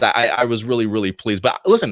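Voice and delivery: normal talking voice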